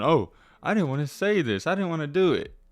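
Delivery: mock taunting, parroting echo voice. Mocking a streamer's repeated excuse: mocking imitation of the streamer. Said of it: "Him going".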